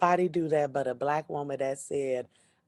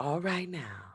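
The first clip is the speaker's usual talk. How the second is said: put-on warm Southern voice, quieter; 3 semitones higher, 6 dB quieter than usual. Doing an impression for the podcast audience: Tabitha Brown impression. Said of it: "Let me do my Tabitha Brown impression".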